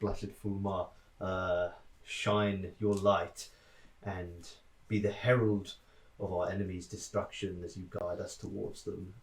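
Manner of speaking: soft, hushed half-whisper. Praying in character to Fulmar while steering a ship in a storm: half-whispered prayer. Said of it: "whisper a small prayer to Fulmar".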